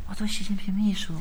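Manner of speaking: barely audible, very soft, hushed voice. Acting out someone asked what they really do, answering in a very quiet voice. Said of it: "很小声".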